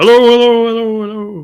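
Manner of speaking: booming, very loud. Speaker shows how they'd come in to keep people's attention: booming voice. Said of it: "Just come in booming".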